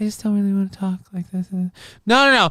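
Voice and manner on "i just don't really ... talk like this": soft, hushed, soft-spoken delivery with no oomph. Mocking people on the internet who talk quietly: imitating a soft talker. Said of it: "so many times it's women where they're like".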